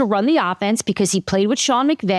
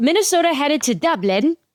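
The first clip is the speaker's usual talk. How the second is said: fake Irish accent, higher; 6 semitones higher than usual. Announcing a team is headed to Dublin: put-on Irish accent. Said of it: "Was that an Irish accent?".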